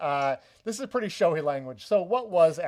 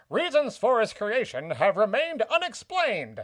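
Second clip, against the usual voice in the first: put-on mid-Atlantic accent, higher; 7 semitones higher than usual. Reading out a quoted passage to the others, in a mid-Atlantic accent. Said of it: "like a mid Atlantic accent for this".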